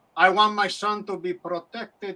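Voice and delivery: slow mock Cuban accent. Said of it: "Rod Steiger doing a Cuban".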